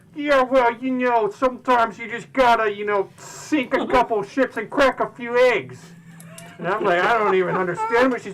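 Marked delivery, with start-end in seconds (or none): 0.2-5.8 high-pitched goblin voice. Quoting a woman's reply to them, in their best goblin impersonation. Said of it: "my best goblin impersonation is like".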